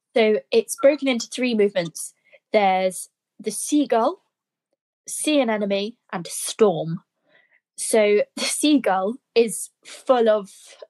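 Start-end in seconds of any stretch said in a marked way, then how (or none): 7.8-10.5 giggling and laughing through the words. Describing the seagull movement of a funny oboe piece, laughing while talking. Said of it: "I'm laughing because it's just such a funny piece".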